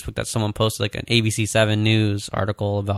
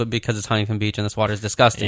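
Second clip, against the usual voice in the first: ordinary talk, nothing marked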